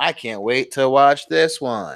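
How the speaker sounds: sarcastic, put-on robotic voice. Retelling own past sarcastic reaction to news: sarcastic robot voice. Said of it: "I said in my robot, "What the fuck" voice".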